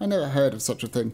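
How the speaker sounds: usual speaking voice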